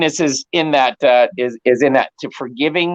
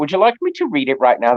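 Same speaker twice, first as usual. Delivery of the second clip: light, playful put-on British accent. Offering to read the morning affirmations aloud in a put-on British accent. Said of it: "That's my little British accent".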